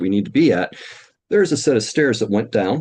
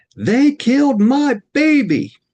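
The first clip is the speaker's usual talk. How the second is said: slow, very high, drawn-out screaming cry; 4 dB louder than usual. Retelling arriving at a call where a woman outside screams: imitating a woman screaming. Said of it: "this woman's screaming".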